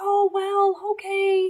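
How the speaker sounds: soft, quiet, timid, hesitant voice.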